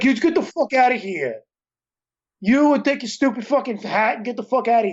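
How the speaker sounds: put-on generic New York-style accent. Imitate an actor who talks like he's from New York, in a put-on generic East Coast accent. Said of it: "He just does like this generic East Coast accent".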